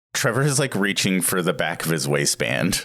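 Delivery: ordinary talk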